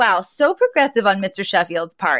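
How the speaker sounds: normal talking voice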